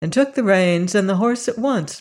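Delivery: ordinary delivery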